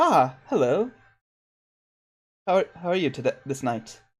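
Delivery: dapper, fancy gentleman character voice. Voicing Octavio greeting a player character who sits down: voicing Octavio. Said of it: "he sits down and he goes".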